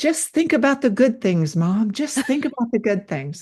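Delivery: put-on high little-kid voice. Retelling what her six-year-old son said behind her, in his little voice. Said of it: "I hear him say in this little voice".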